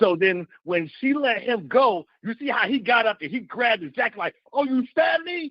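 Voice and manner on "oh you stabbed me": angry yelling, higher pitch. Retelling how a stabbed man got up: imitating someone yelling angrily. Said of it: "he's yelling and he's mad".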